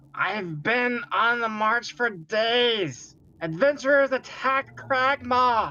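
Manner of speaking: very high-pitched goblin creature voice. Role-playing a goblin answering someone on the other side of a door; goblin voice. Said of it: "That was a great goblin voice".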